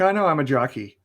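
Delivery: ordinary talk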